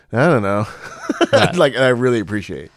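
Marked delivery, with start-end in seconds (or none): none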